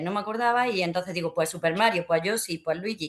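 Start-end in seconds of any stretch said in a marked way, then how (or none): none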